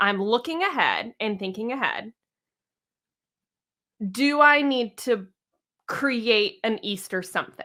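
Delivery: ordinary talk, nothing marked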